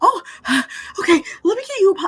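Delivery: very high nervous voice. Acting out Mrs Lovett offering a customer a pie: nervous Mrs Lovett voice. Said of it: "She's a little nervous".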